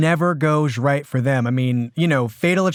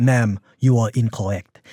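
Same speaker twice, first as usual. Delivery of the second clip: put-on French man voice, lower; 5 semitones lower than usual. Retelling a film husband calming his wife: imitating Charles Boyer's character. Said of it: "And he's like".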